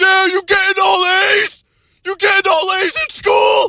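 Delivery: very high, top-of-the-lungs yell. Retelling family members at gatherings, imitating relatives screaming. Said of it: "screaming at the top of their lungs".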